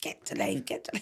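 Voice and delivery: put-on Cockney accent, soft, near whisper. Retelling what a spirit nan said at a sitting, in a cockney accent. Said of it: "in a Cockney accent".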